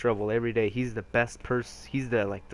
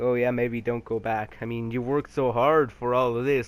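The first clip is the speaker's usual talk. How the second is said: sarcastic, mocking voice; 3 dB louder than usual. Retelling mom's reply in the story, imitating mom's sarcasm. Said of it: "like in a sarcastic way".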